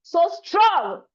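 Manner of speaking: loud, near-shouted hard stress on so strong. Giving speech feedback on emphasis, showing delivery: shouting so strong. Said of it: "I hope I haven't shouted too much in your mics".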